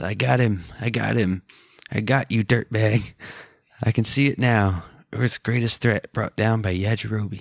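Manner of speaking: plain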